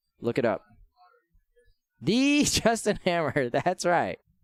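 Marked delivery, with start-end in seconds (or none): 2.0-3.5 "the" hit hard with heavy stress. Naming the Iron Man 2 villain, strong stress on the. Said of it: "I got to put emphasis on the the".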